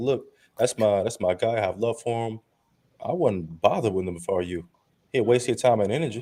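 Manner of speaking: ordinary talk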